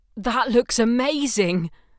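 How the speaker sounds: very loud, high calling-out shout. He calls out inside their walls, where no one can hear, shouting. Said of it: "he shouted, not that anyone could hear him there, inside their walls".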